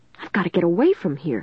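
ordinary delivery

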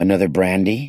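ordinary delivery

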